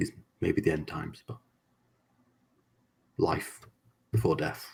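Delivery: hushed, whispered words. Speaking to the guy while Vincent is helped out, whispering. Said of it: "I kind of like try and whisper to the guy".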